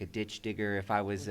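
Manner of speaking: usual speaking voice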